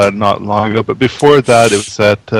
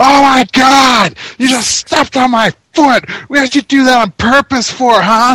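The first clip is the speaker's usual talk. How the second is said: put-on shrieking, very high-pitched tirade. Retelling a woman yelling at a man who stepped on her flip-flop; retelling a scream. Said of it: "starts screaming at him like".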